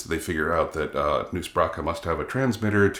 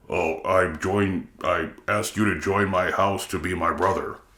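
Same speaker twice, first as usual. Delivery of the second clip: put-on deep alien voice. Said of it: "he puts on the deep Klingon voice".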